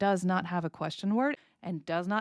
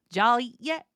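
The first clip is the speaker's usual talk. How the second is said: tune climbing upward on yet; 3 semitones higher, 6 dB louder than usual. Intonation lesson, telling a question from a sentence: rising pitch at the end. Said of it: "the intonation is on the last part of the sentence. It goes up".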